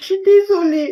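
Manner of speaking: very high, tearful sobbing delivery. In a sketch, apologizing while being told to stop crying, crying. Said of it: "arrête de pleurer".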